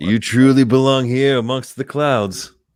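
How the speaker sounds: slow, sexy, seductive leading-man voice. Trying the line after another speaker asks to hear it: Lando voice. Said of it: "can I hear your Lando voice?".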